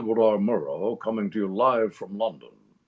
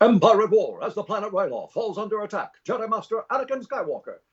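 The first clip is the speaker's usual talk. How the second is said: put-on high-pitched old-timey newsreel announcer voice; 11 semitones higher than usual. Showing the opening narration voice he used: old newsreel announcer voice. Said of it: "that's just an old newsreel guy".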